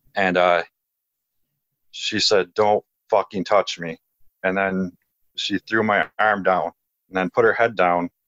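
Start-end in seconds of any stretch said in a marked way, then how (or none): 2.5-3.9 put-on dark, heavy, graspy voice. Retelling what a girl with completely red eyes said: imitating a dark, heavy, graspy voice. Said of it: "a dark, like, heavy, you know, graspy voice".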